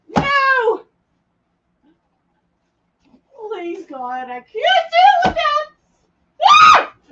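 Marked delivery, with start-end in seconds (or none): 0.1-5.6 panicked screaming, higher and louder. Panicking at a huge creature, screaming in panic. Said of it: "I'm so sorry to scream in your ear".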